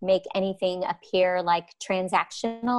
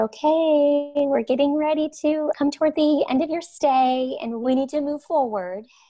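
sweet, high, gentle voice, drawn-out "okay"; 8 semitones higher, 3 dB louder than usual. Recounting what a caseworker said to the speaker near the end of a stay, in a sweet gentle voice. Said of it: "in her so, so beautiful, sweet voice".

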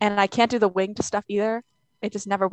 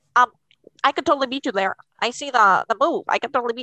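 nerdy-sounding guy voice; 3 semitones higher, 4 dB louder than usual. Retelling a chess club guy's boast, imitating a chess club guy's way of talking. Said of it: "I saw that he talked like this".

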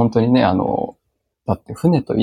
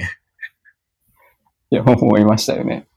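speaking through laughter. Repeating a remark as the other speaker asks why they're laughing, laughing while talking. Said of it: "なんで笑ってんの".

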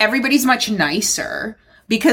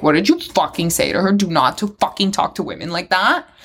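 angry, confrontational, furious tirade; 3 semitones lower than usual. Retelling the speaker's husband confronting a man who muttered at her, imitating an angry outburst. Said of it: "my husband just fucking went off on him".

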